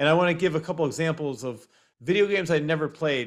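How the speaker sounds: normal talking voice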